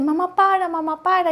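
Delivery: put-on terrified child voice, high, frightened and pleading. A mother retells her son crying and begging her to stop, imitating him very scared. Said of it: "y muy asustado".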